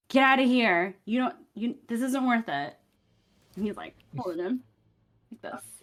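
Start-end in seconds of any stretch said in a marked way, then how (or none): 0.1-2.7 menacing, hostile, threatening delivery. Voicing a thief holding a hostage, warning the party off: threatening. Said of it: "she threatens you".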